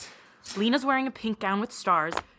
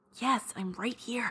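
hushed, soft half-whisper; 6 dB quieter than usual. Answering whether she got in, quietly: half-whispering. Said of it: "You don't have to whisper".

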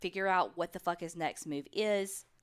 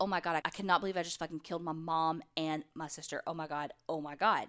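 put-on panicked, freaking-out tone. Retelling what a killer said while pacing: imitating someone freaking out. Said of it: "And he's freaking out".

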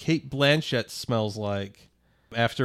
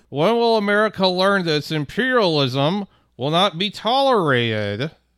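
loud, high put-on upper-Midwestern accent; 8 semitones higher, 7 dB louder than usual. Imitating a movie villain's speech: Osama bin Laden speaking like Andrew Tate. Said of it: "What if Osama bin Laden spoke like Andrew Tate?".

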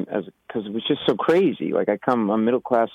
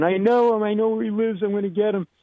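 play-acted very high, wild drunken screaming; 11 semitones higher than usual. Retelling a cut, drunk man wandering around after a slashing, imitating a drunk man screaming. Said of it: "He was drunk, screaming".

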